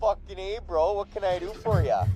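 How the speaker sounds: put-on Alberta accent. Play a robot called Jarvis answering when asked if you are there, in a put-on boony Alberta accent. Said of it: "Alberta accent chat".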